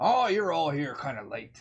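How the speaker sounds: put-on Irish lilt in an elderly voice. Game master voicing an elderly woman entering the common room, Irish accent. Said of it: "because that's the accent that just came out".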